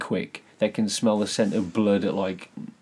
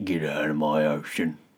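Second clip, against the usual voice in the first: low, grouchy, grumpier sea-creature voice; 5 semitones lower than usual. Suggesting a character should sound grumpier than the cute version: grumpier voice. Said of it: "Like a grumpier voice".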